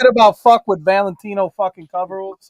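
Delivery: very loud, high, frustrated, furious yelling. Fed up after asking for more specifics, the speaker bursts into angry frustrated yelling. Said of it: "Why are you yelling at me?".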